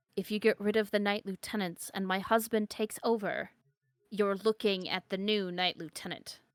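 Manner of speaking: very quiet, barely voiced, hushed undertone. Voicing a guard who leans in to a player: very quiet voice. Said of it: "he just leans in and very quietly says".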